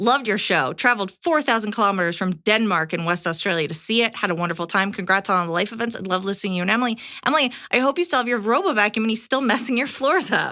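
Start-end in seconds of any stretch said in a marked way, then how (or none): none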